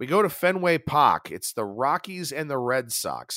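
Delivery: amateur, put-on Boston accent. Introducing today's plays at Fenway Park, in a Boston accent attempt. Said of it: "my Boston accent attempt there".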